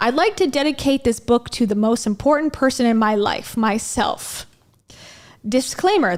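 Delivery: ordinary delivery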